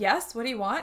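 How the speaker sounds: normal talking voice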